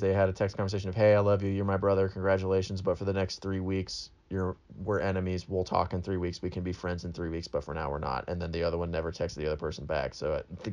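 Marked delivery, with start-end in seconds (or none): none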